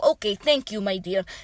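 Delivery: put-on thick Russian accent. Retelling what an exchange student from Poland said after an explanation: thick Russian accent. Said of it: "a thick Russian accent".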